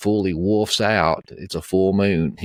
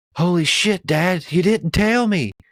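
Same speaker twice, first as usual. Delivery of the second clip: very high, drawn-out, stunned, freaking-out outburst; 10 semitones higher than usual. Retelling a son's words to his dad: imitating someone freaking out. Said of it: "and he's freaking out".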